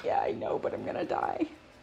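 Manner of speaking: rough, creaky talking-dog voice. Retelling how the dog runs to the husband to escape grooming: voicing the dog Ammo. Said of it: "He's like".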